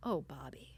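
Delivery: tender, gentle, soft delivery. Retelling how a person reacted while watching a clip, in a gentle voice. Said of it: "the way he calls himself by name is so gentle".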